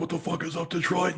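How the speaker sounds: put-on really thick, heavy Viking-sounding accent. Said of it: "the Viking sounding accent".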